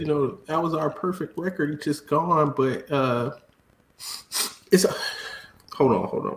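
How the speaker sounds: fake crying, sobbing between the words. Answering a question about a lost perfect record: mock crying. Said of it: "I'm just crying because".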